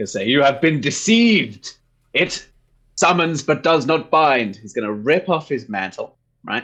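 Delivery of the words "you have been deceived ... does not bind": loud, high, booming bellowed proclamation. Stepping through a scene, the speaker voices a character's first words, loud and bellowing. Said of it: "in a loud, bellowing voice".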